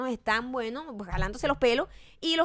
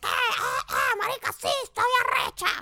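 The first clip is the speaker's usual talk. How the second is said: loud, brash put-on voice, pitched higher; 12 semitones higher than usual. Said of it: "[name] es como escandalosa".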